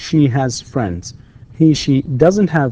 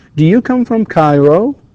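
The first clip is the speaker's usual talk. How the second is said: rising intonation lifting on Cairo; 4 semitones higher, 5 dB louder than usual. English lesson drilling yes-no questions: rising intonation on 'Cairo'. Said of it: "كله rising intonation".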